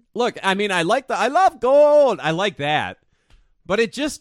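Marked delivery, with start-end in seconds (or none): 1.2-2.2 very loud, booming, high put-on Dutch accent. Quoting a movie line after saying the movie sucked, Dutch accent. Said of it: "That's Dutch".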